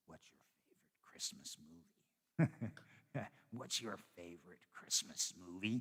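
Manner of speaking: low, sinister, menacing voice. Describing a Christmas movie's opening, imitating the caller's sinister voice speaking to Santa. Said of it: "Kind of in a sinister way".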